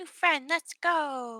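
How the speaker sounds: high, slow call with "go" stretched. Voicing Squishy greeting Whisper as a new friend: voicing Squishy. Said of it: "Squishy's gonna look at Whisper and be like".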